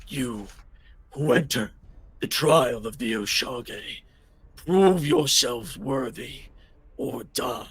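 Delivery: speaking in a dragon voice. Voicing a dragon that speaks in the party's heads: voicing a dragon. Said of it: "speaks in all of your heads and goes".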